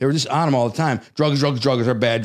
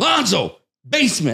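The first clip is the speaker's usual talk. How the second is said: forceful delivery, pitched much higher; 7 semitones higher than usual. Retelling how he was summoned to the basement, retelling a forceful command. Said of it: "he said it with force".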